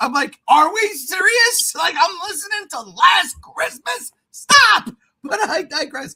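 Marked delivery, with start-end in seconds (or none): 0.5-4.9 play-acted, fed-up, loud, high-pitched yell. Recalling hearing Christmas music in July, retelling their own yelling. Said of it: "I'm yelling".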